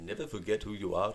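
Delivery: imitated Indian accent in a woman's voice.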